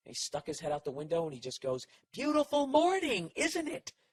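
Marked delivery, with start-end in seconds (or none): 2.1-3.9 very high, drawn-out sarcastic yell. Retelling what the old neighbor shouted from his window: imitating a sarcastic yell. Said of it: "Why is he yelling".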